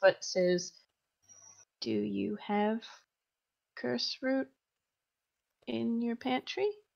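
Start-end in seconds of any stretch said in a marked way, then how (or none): 1.8-6.7 very quiet, hushed voice. Playing a character who pats a shaken man's side and asks him, keeping voice really low. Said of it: "he's still keeping his voice really, really low".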